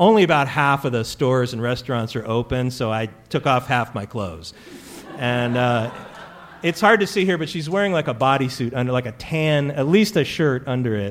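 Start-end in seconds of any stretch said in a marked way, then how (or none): none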